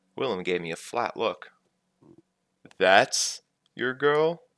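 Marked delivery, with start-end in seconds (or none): 2.8-4.4 raised voice thick with disbelief. Narrator voicing Willem questioning the narrator, thick with disbelief. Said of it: "his voice thick with disbelief".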